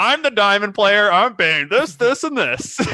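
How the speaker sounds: mocking, loud, high-pitched voice. Imitating high elo top laners in champ select: imitating a high elo top laner. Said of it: "That was a great impersonation".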